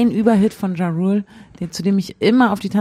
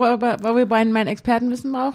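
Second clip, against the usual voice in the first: plain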